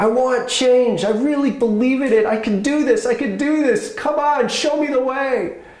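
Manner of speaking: very high shrill scream. Telling a story of a man calling out to an angel, imitating him screaming. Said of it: "he screams a little louder".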